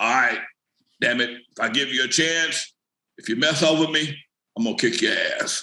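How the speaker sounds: low, rough, gravelly man's growl. Retelling what Jeffrey said to him, imitating Jeffrey's gravelly voice. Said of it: "in his real uh, gravelly voice".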